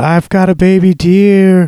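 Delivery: slow, high-pitched, drawn-out hollered yell. Retelling a film scene where a man in a river calls out: imitating someone yelling. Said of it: "yelling out".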